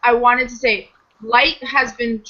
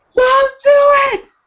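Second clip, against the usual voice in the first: mock scream, higher and louder; 7 dB louder than usual. Retelling own reaction while typing notes: imitating own screaming. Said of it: "I literally am screaming".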